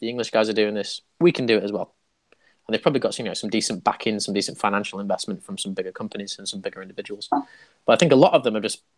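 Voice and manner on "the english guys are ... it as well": ordinary delivery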